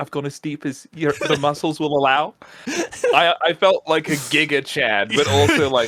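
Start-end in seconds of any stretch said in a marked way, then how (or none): 0.0-2.3 put-on Scottish accent. Retelling what a Scottish masseuse said: imitating a Scottish accent. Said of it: "She was Scottish, and she said it like that".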